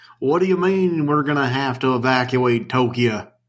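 clumsy, fake Texas accent, laid on thick. Imitating a general from an anime dub, in a bad texas accent. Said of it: "has a bad Texas accent".

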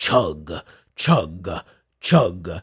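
deep, dark voice saying chug. Describing the sound of a strange train chugging, in a deep, dark voice. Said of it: "like something is saying chug in a deep, dark voice".

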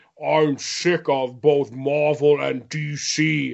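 very slow, deliberate, drawn-out delivery. Retelling a comics publishing story, doing an Alan Moore impression. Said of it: "here's my Alan Moore impression".

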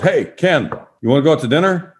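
high, called-out yell. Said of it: "And he yells".

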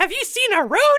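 very high, small, bright tiny storybook-villager voice. Playing a munchkin in a scene of only questions, in a Munchkin voice. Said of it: "[name]'s Munchkin voice is amazing".

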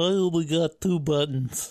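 put-on small child voice. Speaker does an impression of little Luke: little Luke impression. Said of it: "That's my impression of little Luke".

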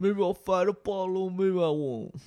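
put-on mumbly voice. A newly greeted guest jokes around with the crew, doing a Rocky Balboa impression. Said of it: "That was my Rocky Balboa".

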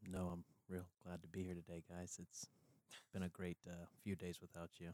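very quiet, too soft to hear. Speaking to the group so quietly the others can't hear him, very quiet voice. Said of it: "we can't hear when you speak like that".

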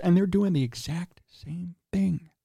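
hushed, secretive stage whisper. Discussing the Bulls under their new executive, in a stage whisper. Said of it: "I'm whispering because it's a secret".

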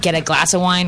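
usual speaking voice

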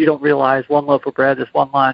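usual speaking voice

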